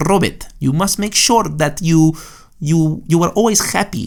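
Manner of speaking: high fake Argentine accent. Retelling grandma's advice in her argentine accent: imitating grandma's argentine accent. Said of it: "she has this Argentine accent".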